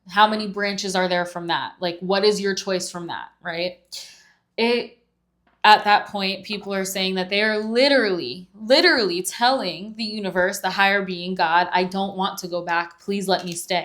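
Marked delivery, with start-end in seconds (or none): 11.7-13.8 put-on tearful, pleading voice. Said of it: "Begging, pleading, crying".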